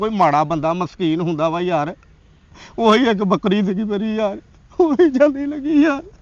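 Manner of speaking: crying, weeping. Lamenting a theft in the village to a visitor: crying. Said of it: "ਨਾ ਰੋ ਏ".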